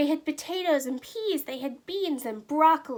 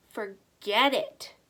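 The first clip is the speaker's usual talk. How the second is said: gruff, rough voice, lower pitch; 6 semitones lower than usual. A man crossing the street turns down two travelers asking for help, gruff voice. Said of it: "said the man in a gruff voice".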